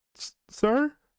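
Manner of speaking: put-on very high, halting young girl voice. Voicing a child who steps up to a traveler: voicing a young girl. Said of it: "the older of the two kind of stands up".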